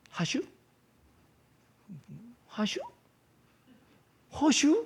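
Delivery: very high, swooping, sing-song Korean regional dialect. Retelling how local people talk in a hard-to-understand way, imitating regional dialect. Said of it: "사투리의 특색이 있어요".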